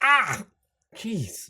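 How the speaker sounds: sudden, high, loud, pained yelp. Voicing a character who pricks himself on a dagger: pained yelp. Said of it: "and he pricks himself".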